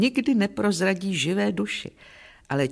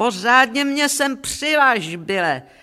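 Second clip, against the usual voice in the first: put-on drunken shouting, slower; 5 semitones higher, 3 dB louder than usual. Narrator reads a drunk farm woman yelling to her farmhand, drunken shout. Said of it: "Opilá jako Dán vyšplhala na žací stroj a vykřikla na čeledína".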